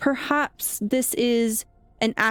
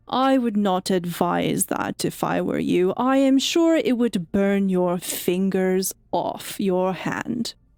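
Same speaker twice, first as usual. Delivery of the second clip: disembodied, echoing voice from nowhere; 3 semitones lower than usual. Voicing a glowing hound that speaks without moving: disembodied echoing voice. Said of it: "you hear this sort of disembodied voice".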